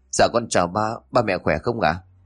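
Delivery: plain reading voice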